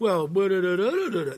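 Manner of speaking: loud, high, sarcastic snide singsong. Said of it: "that kind of tone in your voice".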